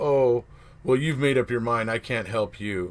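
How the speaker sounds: ordinary talk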